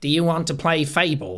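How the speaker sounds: trailer-style celebrity voice. Quoting a trailer line: Richard Ayoade voice. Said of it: "I had Richard Ayoade in the trailer where he's like".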